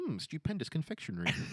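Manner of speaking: absurdly refined, precise enunciation. Speaker mocks a man who talks the opposite of mumbling: exaggeratedly elegant, not mumbling. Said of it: "instead of s- mumbling".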